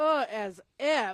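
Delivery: loud, dismissive, curt brush-off tone. Retelling a scene from Clueless where a guy hits on her: imitating the girl saying as if. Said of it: "I sounded just like her right there".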